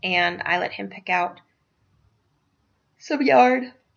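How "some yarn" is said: words spoken while yawning. Telling listeners a personal story: yawning while talking. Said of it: "Excuse me for yawning".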